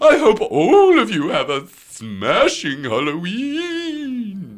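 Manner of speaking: spooky, swooping, loud voice, Halloween drawn out. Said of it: "Is that a good monster mash voice?".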